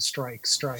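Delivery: ordinary delivery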